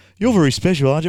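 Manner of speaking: loud sarcastic delivery. Quoting a coach's press conference line: imitating Ross Lyon's sarcasm. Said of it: "I love his little, uh, sarcasm".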